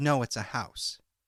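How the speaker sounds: ordinary talk, nothing marked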